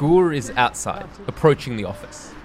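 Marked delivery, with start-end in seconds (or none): none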